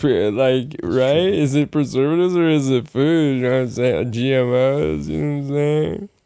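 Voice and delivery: annoying put-on voice with GMOs stretched out. Doing a bit for friends in an obnoxious put-on voice. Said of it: "your voice isn't like that in your life because it's so obnoxious".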